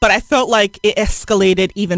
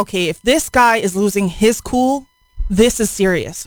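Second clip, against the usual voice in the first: ordinary delivery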